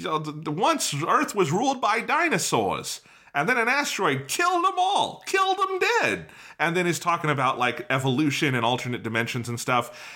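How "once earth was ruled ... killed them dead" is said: very high, swooping, weird put-on Brooklyn accent. Retelling the opening narration of a Mario movie; weird Brooklyn accent. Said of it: "this weird Brooklyn accent motherfucker comes in and is like".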